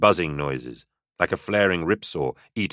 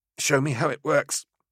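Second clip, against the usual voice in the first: high, breathless, gasped-out words; 8 semitones higher than usual. Handed a grenade, she asks him to show her how it works, gasping. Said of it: "she gasped".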